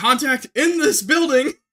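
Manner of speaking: shrill, high, loud yelling. Recounting a story, retelling yelling over the shoulder to everyone. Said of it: "I'm like yelling over my shoulder".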